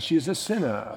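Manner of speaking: put-on British accent. Acting out what a man maybe said, in a put-on British accent. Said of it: "Maybe he had a British accent".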